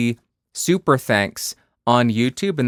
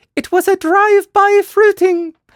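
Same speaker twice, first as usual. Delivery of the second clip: put-on old nanny voice, much higher, louder; 6 dB louder than usual. After thanking a supporter, voicing what Mrs. Doubtfire would say: Mrs. Doubtfire voice. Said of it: "She would say that too".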